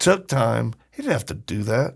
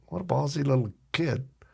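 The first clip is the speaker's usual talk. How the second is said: words broken up by laughter; 4 semitones higher, 5 dB quieter than usual. Retelling how a booth worker reacted: imitating someone laughing while talking. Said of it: "he starts laughing like".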